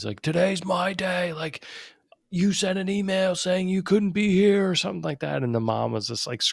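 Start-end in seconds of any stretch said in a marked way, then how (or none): 0.2-4.7 put-on high, screaming outburst. Retelling a pickup scene where the dad is screaming: retelling a dad screaming. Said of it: "he's, like, screaming. He's like".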